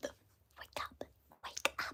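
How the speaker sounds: soft, hissing whispered character voice. An actor voicing a character's line, in a hissy whisper. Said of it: "hissy question mark? Whispers".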